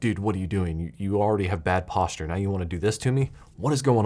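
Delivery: ordinary delivery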